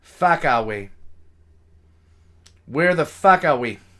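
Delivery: put-on heavy Boston accent. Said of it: "this really heavy Bostonian accent".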